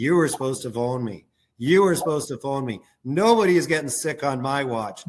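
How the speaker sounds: plain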